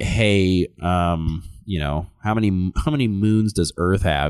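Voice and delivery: ordinary delivery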